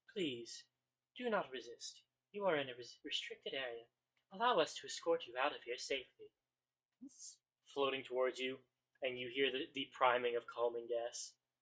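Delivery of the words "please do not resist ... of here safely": gentle, reassuring, very calm, soothing machine drone. Game narrator voices the activated machines addressing the players: very calm, soothing voice. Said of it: "a very calm, soothing voice".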